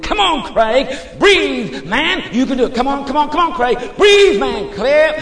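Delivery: urgent high-pitched shouting.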